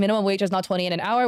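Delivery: normal talking voice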